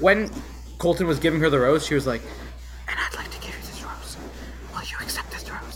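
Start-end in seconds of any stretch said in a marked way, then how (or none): 2.9-5.8 very quiet, breathy, hushed, secretive whisper. Retelling what a woman whispered as Colton gave her a rose: whispering. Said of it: "they always kept whispering".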